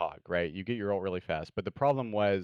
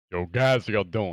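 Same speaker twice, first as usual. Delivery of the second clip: put-on deep voice, louder; 6 dB louder than usual. Greeting the guys while trying out a put-on deep voice. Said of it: "Your voice is so deep".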